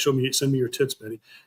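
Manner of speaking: mock mean taunting tone. Retelling a taunt said to betty during a fight: retelling own mean taunt. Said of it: "in a mean way".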